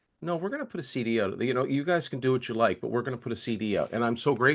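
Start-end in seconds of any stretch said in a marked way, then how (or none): 0.2-3.9 hushed, very quiet, calm voice. Picturing a company's reply about releasing a CD, imitating someone saying it very quietly. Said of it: "I could just picture it very quietly saying".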